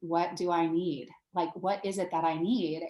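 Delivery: ordinary delivery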